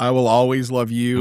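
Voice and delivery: plain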